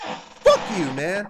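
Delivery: voice cracking. Cursing someone out for disrespecting another man, voice cracking. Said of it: "my voice cracked".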